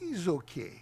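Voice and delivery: convincing put-on Ukrainian accent. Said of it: "the perfect Ukrainian accent".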